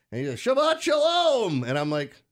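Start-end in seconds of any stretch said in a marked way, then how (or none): 0.4-1.6 acted yelling way up in a very high register. Retelling a guy yelling at him as he approached, retelling a yell. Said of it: "and the guy's yelling".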